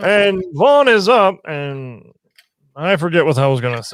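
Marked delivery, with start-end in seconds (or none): 0.0-1.4 put-on loud, drunk, sloshed stadium ballpark announcer voice. Calling a play for the listeners as the mock-drunk Major League announcer. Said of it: "the announcer from Major League just when he's completely drunk".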